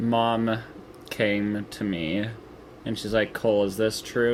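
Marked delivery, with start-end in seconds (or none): none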